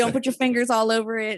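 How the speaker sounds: usual speaking voice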